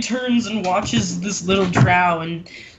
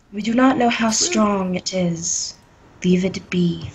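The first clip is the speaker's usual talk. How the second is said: speaking softly in a gentle voice. Playing a character in the game, she answers the group, speaking softly. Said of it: "says softly".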